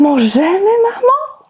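very high, joyful, delighted tone. Reading a children's story aloud, the little one asks its mother, asking joyfully. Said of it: "Zapytało uradowane maleństwo".

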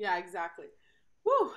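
out-of-breath, winded woo. Right after doing jumping jacks, agreeing with the other speaker; out of breath. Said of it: "I'm out of breath".

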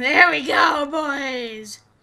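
loud, slow, triumphant yell.

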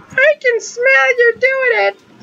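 squeaked out at the very top of range. Speaker retelling what a man who came back into the restroom said, Mickey Mouse voice. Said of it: "did the same Mickey Mouse voice impression".

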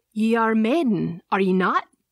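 firm, pointed tone, no give. Narrator reads a man questioning a woman edging toward the door, asked firmly. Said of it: "He asked firmly".

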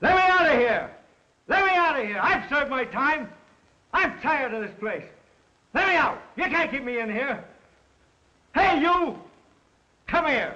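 very high-pitched, loud shouting. Yelling at a guard through the bars to be let out: yelling. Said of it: "Pipe down".

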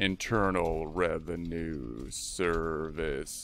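mock menacing, threatening voice. Entering the new vendor's full name for a check: mock menacing voice. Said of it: "a menacing voice 'cause they're kinda scary".

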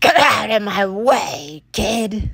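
snarling, growly, grouchy voice. Reading a Christmas story aloud, Mr. Gronkle sees a child and snarls. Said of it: "he snarls".

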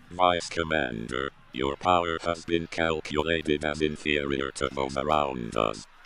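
almost monotone, flat, rumbling. A golem, holding a struggling captive, addresses the vice commander: flat monotone rumble. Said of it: "The Golem rumbled flatly, almost in monotone".

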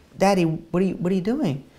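put-on weak, feeble voice like a sick boy. Retelling a story of a boy tied down, asking his father: imitating a weak child's voice. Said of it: "very weakly looks up to his father and says".

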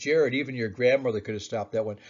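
usual speaking voice

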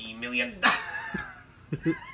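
very high, choked, squeezed-throat cartoon voice. A video host, after telling viewers not to end the video: Mr. Krabs voice. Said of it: "That's how he did the voice".

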